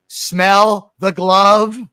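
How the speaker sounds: very loud, belted put-on voice dripping with irony. Mocking how the press reacts to announcements: ironic Fran Drescher voice. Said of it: "like an ironic version of Fran Drescher".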